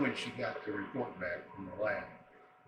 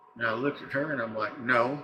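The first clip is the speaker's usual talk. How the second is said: normal talking voice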